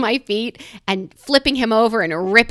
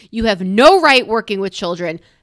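ordinary talk

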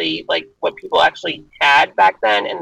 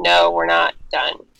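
mock-stubborn, defiant tone. Describing a leader who refused to give up, acting out his stubborn refusal. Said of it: "I love how he was stubborn and saying".

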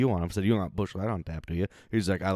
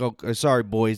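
loud, put-on Canadian accent on every word; 2 semitones higher, 5 dB louder than usual. Speaker retells what a man said to the group: imitating a Canadian accent. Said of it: "He had like a Canadian accent".

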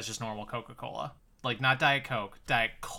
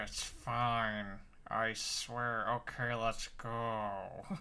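very slow, through gritted teeth, "go" dragged out; 7 dB quieter than usual. Describing a couple on a show, speaker imitates Jen talking through gritted teeth. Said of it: "Jen just like gritting her teeth like".

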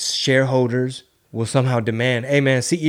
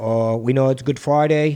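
put-on Boston Irish accent. Retelling a clip of a cop on the mic, the speaker does a boston irish accent. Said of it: "That's a Boston Irish accent".

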